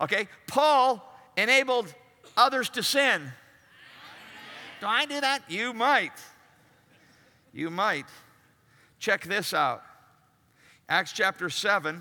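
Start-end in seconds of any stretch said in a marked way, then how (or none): 0.5-5.5 really snotty, snide, pitched-up voice. Leading a group in saying a line together, in a really snotty voice. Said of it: "in that really snotty voice".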